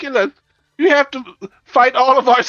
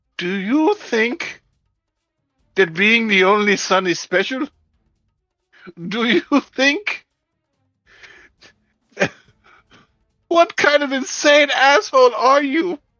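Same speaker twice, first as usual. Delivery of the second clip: hysterical, crazed rant through maniacal laughter. Voicing a character who starts laughing at another: hysterical maniacal laughing voice. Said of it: "a hysterical, insane, crazed, maniacal laugh".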